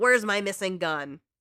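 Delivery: put-on furious man's outburst. Retelling how the step douche burst into Chloe's room, imitating a furious man. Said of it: "completely furious".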